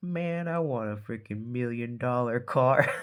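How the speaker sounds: jealous, envious, hater-ish tone. Describing a jealous tone coming through, the speaker voices it: mock-jealous tone. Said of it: "jelly baby kind of uh tone in there, like".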